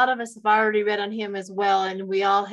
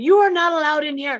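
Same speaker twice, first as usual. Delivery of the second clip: put-on high, loud, shouted scolding yell; 7 semitones higher, 5 dB louder than usual. Retelling yelling at insects in the house: imitating own yelling. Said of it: "I'm the one yelling at them".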